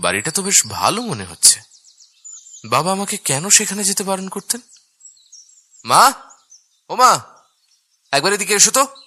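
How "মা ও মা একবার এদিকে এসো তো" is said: loud yelling. Calling his mother from another room, shouting for her. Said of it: "এত চিল্লাচ্ছিস কেন?".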